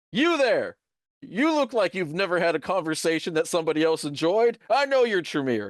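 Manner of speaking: high-pitched, bullying, calling-out voice. Narrating a game scene, the speaker voices Gabriel calling out to someone: Gabriel yelling. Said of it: "you can hear him yell".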